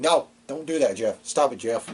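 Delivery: mock scolding tone, acted out. Retelling how someone told Jeff Hardy off: imitating scolding someone like a cat. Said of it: "like he was a cat doing something".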